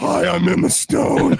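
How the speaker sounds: shrill, loud, rough, drawn-out voice. Doing an impression after calling the actress's voice deep: Emma Stone impression. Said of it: "Emma Stone's voice is, like, very, like, deep".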